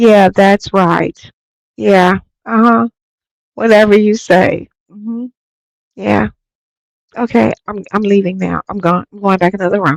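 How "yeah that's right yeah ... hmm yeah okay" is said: mock-flat, emotionless, slower put-on voice. Acting out how she agreed, imitating her emotionless agreement. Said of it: "she said it with no emotion".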